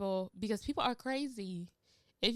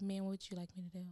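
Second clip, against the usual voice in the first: put-on cool, calm, quiet, unbothered delivery; 3 semitones lower, 9 dB quieter than usual. Retelling staying unruffled while someone yells at them: retelling a calm reply. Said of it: "you're just this calm like this".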